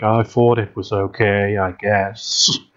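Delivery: slow, flat, uninflected monotone. Speaker predicts Henry's answer to a question about the game: imitating Henry's monotone. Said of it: "Henry will probably have the most monotone reactions".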